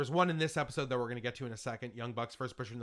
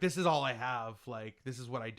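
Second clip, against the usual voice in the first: normal talking voice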